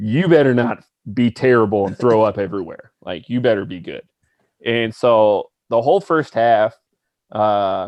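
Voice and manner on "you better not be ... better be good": dead serious, no-joke, deadpan tone. Retelling a competitive person's warning before a game: imitating someone dead serious. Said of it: "dead on serious".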